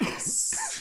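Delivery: tiny, soft little whisper. Voicing a voice in a character's head: little whisper. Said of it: "a little whisper in the back of your head".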